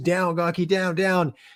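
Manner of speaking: mock frantic, high, urgent screaming. A flight lead retells the other pilot screaming at him, retelling urgent screaming. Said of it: "Shady just starts screaming at me".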